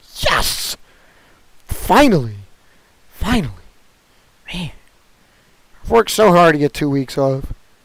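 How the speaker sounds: a little cracky, slightly cracking voice. Speaker joking that maybe he's got COVID and two weeks off, a little cracky. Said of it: "I'm a little bit cracky".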